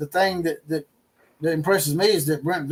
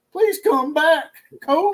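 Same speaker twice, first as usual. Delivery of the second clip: put-on fake crying, higher pitch; 12 semitones higher, 4 dB louder than usual. Mocking someone crying on the sidelines: imitating Sharon's mock crying. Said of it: "Sharon crying over there on the sidelines".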